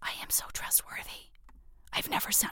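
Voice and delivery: hushed, breathy, very quiet whisper. Before reading out an email from Jem, whispering. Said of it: "Why am I whispering?".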